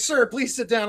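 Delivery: ordinary delivery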